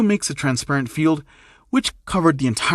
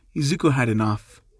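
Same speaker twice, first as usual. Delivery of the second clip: plain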